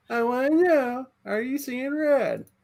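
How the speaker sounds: very high voice. A host does his best impression of Angel, who is present: imitating Angel. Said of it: "That's the best Angel impression I have".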